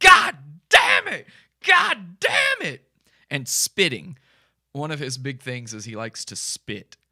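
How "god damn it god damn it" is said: very high, loud, shrill, drawn-out scream. Retelling a video where Chris screams in the street: imitating Chris screaming. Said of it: "He's just screaming".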